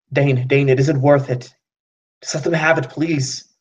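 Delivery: urgent, pleading, begging tone. Narrator voicing a woman grabbing her partner's hand to stop him, pleading. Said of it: "trying to stop him".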